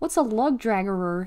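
usual speaking voice

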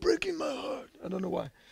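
put-on mob boss voice. Rereading a line from the text, in a Godfather voice. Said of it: "I read that in the Godfather voice".

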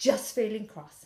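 ordinary talk, nothing marked

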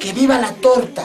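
ordinary delivery

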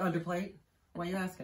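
usual speaking voice

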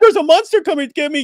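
mocking little kid voice. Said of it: "that sounds like a little kid".

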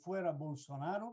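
ordinary talk

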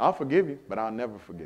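very quiet, hushed, resentful, bitter grumble. Acting out how people say they forgive: imitating someone saying it bitterly. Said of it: "And I'm gonna say it with bitterness".

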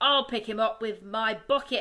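loud, yelled shout. A farmer digging for a fox calls out to the others: shouting. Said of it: "shouted Bunce".

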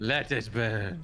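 evil, sinister, villainous tone. Asked why they sound evil while carrying gasoline: evil voice. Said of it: "Why do you sound evil?".

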